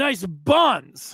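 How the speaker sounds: ordinary delivery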